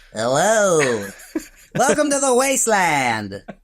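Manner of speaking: high, swooping cartoon voice, long drawn-out hello. Doing an impression of a character, in a Looney Tunes cartoon voice. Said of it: "I'm turning him into a, like a Looney Tunes character".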